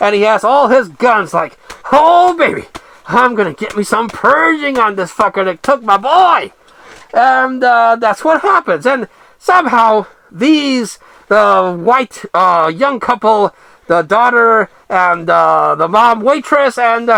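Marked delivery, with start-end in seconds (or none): 1.9-6.5 vengeful, ranting voice. Retelling a movie character out for revenge for his son: imitating a vengeful father. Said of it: "channeling Frank Castle".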